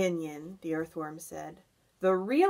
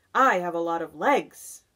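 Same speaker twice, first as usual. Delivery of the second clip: plainly proud, raised voice; 5 dB louder than usual. Answering a remark about its boots, a centipede speaks proudly. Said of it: "the centipede answered proudly".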